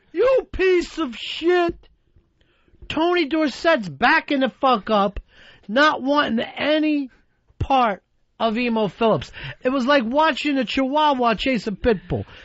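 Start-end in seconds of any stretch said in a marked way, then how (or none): 0.2-1.9 high, drawn-out, play-acted, furious scream. Retelling a furious outburst: imitating someone screaming. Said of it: "even when he was screaming".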